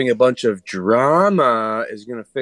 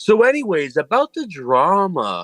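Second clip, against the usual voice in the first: mocking, high swooping drawl, stretched long, harping; 5 semitones higher than usual. Imitating a guy who keeps bringing up the drama in chats: imitating a guy who won't get to the point. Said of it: "That's a good impression".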